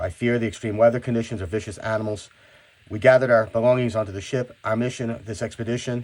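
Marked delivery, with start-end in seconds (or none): none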